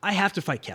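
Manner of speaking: ordinary talk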